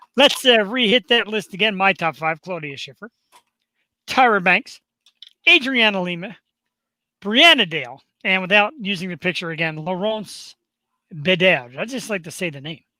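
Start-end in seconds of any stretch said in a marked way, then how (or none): 9.8-11.8 put-on French accent and pronunciation. Reading out a list of top five models, saying the name: french accent. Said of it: "I don't know if my French accent's that good".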